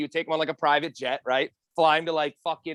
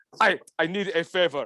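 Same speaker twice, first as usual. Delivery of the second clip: put-on Middle Eastern accent. Retelling a rich scammer's call asking a favor: imitating a Middle Eastern accent. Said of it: "the Middle Eastern accent when there's, like, a fucking bad guy".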